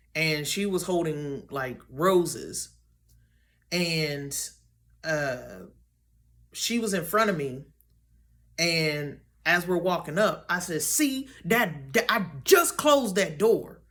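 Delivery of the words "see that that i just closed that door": worked-up, riled-up, insistent, agitated tone. Retelling her own words from a dream: imitating herself getting riled up. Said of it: "I was getting riled up".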